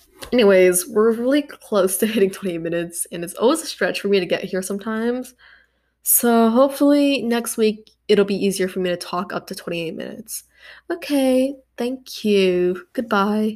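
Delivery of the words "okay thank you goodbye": put-on, clumsy, bad British accent. Signing off at the end of the session, in a bad british accent. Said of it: "I need to stop doing the British accent".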